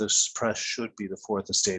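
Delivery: ordinary delivery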